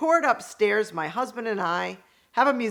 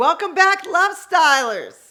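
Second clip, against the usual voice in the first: high, loud, full-on yelling; 8 semitones higher, 6 dB louder than usual. Host greets the Love Stylers at the start of an episode, yelling. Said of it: "I'm yelling. Sorry".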